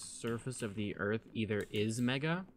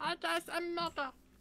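imitated, put-on squeaky voice. Joking with others about how Mega talks, imitating Mega's squeaky voice. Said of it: "They probably talk like this".

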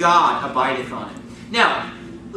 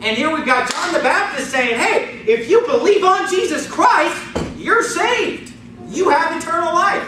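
put-on raised voice, high, slow and deliberate; 9 semitones higher than usual. A preacher teaching from john chapter 3, with a raised voice. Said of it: "notice how he just raised his voice".

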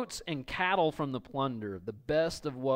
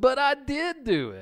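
put-on whiny kid voice, very high, very slow; 12 semitones higher, 5 dB louder than usual. Reading Saul's excuse as if a child said it: imitating a whiny kid's excuse. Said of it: "am I the only one who hears my kid's voice".

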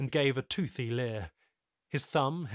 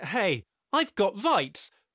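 loud, pitched-up, breathless panting; 7 semitones higher, 6 dB louder than usual. Narrator reads Tyler answering a fellow who just welcomed him, panting. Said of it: "panted Tyler".

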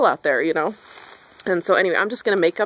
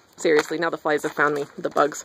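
ordinary delivery

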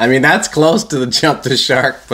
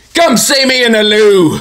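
put-on very high-pitched British accent; 10 semitones higher, 4 dB louder than usual. Imagining the Fonz audition line: British-accent Fonz. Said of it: "he did it with a British accent".

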